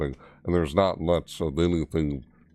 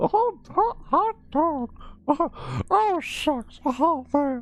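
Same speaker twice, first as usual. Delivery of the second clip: very high pitch, stretched out. Speaker being silly, trying out exclamations: Mickey Mouse voice. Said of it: "What was that supposed to be Mickey Mouse?".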